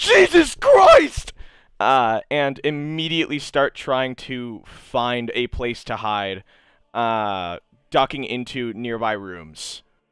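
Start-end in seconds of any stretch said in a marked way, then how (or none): 0.0-1.3 shrill, very high, loud, shrieking panicked scream. Voicing two bystanders who see their friend shot: NPCs screaming in panic. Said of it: "The other two start screaming".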